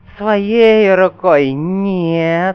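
spectral hissing ghost voice, "нет" stretched long. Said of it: "прошипел призрак Брыкина".

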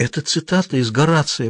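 almost whispering. Frannie answers Susie's question about the Latin words, almost whispering. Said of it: "почти прошептала она".

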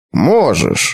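low, scornful, disdainful, contemptuous tone. Master Rugo replies to Til's hesitant answer, contemptuous. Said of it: "презрительно кивнул мастер Руго".

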